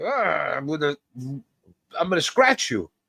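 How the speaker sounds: slow, angry, menacing, drawn-out vampire voice. Voicing a weird vampire figure in a picture: angry vampire voice. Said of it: "He's like an angry vampire".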